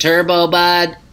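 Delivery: robotic, machine-like put-on voice. Repeating a phrase just said, in a put-on robot voice. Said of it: "That's my robot voice".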